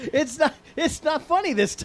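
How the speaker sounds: speech through hard laughter. Someone is about to redo an introduction; tell them not to do it again, laughing hard while speaking. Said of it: "Then why are you laughing so hard?".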